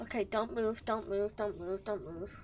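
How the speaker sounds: hushed, soft, frightened, urgent muttering. Streamer playing a game, afraid a gnome will rat them out, scared. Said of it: "I'm really scared right now".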